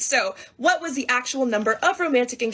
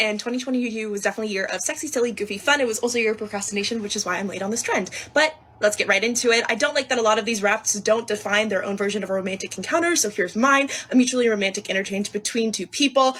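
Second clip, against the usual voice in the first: words tumbling out nonstop, very fast, rapid-fire patter. Starting a late take on a trend, talking very fast. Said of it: "she's just talking at like one hundred miles per hour".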